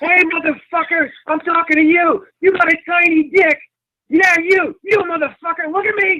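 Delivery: very high-pitched, jeering yell. Re-enacting, when asked, what was yelled at a rally: re-enacting a mocking rally yell. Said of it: "can you say it like you said it at the rally?".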